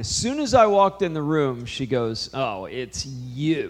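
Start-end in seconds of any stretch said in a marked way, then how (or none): 2.3-3.7 curt, snippy, unwelcoming tone full of attitude. Retelling how the person he was sent to pray with greeted him: imitating someone with real attitude. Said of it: "with real attitude".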